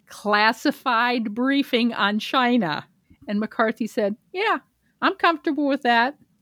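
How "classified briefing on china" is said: very slow, deliberate, pointed word-by-word emphasis. A host reporting a question put to the House Speaker, very slow. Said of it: "I'm going to say this slowly now".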